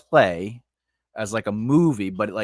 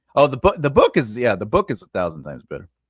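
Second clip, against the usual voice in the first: ordinary talk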